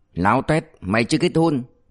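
ordinary delivery

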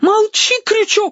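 very high, shrill, squealing shriek. During a quarrel, a girl shrieks at another speaker. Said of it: "взвизгнула девица".

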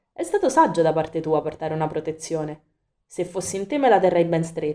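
plain reading voice

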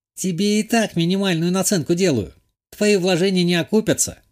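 wry, smirking tone. Nona the herbalist answers the narrator's proposal, smirking. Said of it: "усмехнулась Нона".

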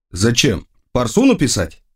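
plain

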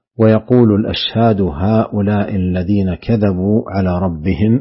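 normal talking voice

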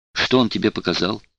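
plain

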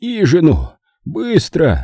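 high, breathed out on a single breath. Narrator reads a collapsed uncle's order to his nephew, said on an exhale. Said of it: "выдохнул Зик".

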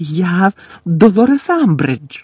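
piercing, shrill, frightened cry. Reading a novel, the headmistress answers a centaur demanding who they are; shrill, frightened cry. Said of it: "вигукнула директорка пронизливим, переляканим голосом".

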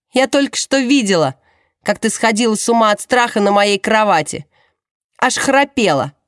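contemptuous scoff. Gemma answers a woman who claims to be frantic with fear, with a contemptuous snort. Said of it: "презрительно фыркает Джемма".

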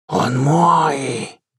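hissing voice like a giant viper. Nastya pulls away from the narrator and turns around; hissing like a giant viper. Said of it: "прошипела она совсем не по-женски, как гигантская гадюка".

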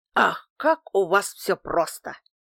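exclamation. A man answers the narrator's accusation about hiding the truth: exclaiming. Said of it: "воскликнул".

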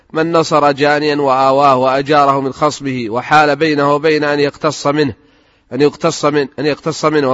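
ordinary delivery

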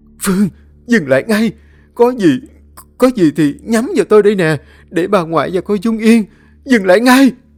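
very high, shrieking, terrified scream. Seeing someone about to stab the grandmother, a character screams in fear. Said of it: "Hường sợ hãi hét lên".

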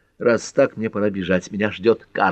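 plain reading voice

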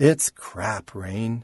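flat, toneless voice. He answers Rain's question about whether his book is finished: flat voice. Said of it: "His voice was flat".

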